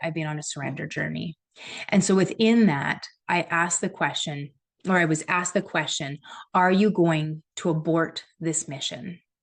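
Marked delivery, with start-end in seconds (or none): 6.5-9.2 put-on big booming voice, slower. Retelling a voice asking a question in the speaker's right ear, imitating a big booming voice. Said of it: "Big booming voice".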